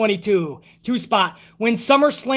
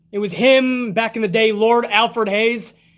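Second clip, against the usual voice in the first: plain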